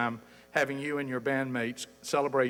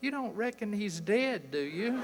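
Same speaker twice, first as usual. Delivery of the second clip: small, sweet little voice, pitched up; 8 semitones higher than usual. Retelling what a woman said leaning in at the organ bench, in a sweet little voice. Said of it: "said in that sweet little voice".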